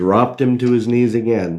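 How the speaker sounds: ordinary delivery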